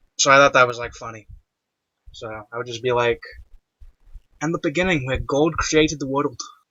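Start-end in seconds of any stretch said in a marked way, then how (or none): 4.4-6.4 put-on Scottish accent, solemn read-aloud style. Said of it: "read the Bible in, like, a Scottish accent".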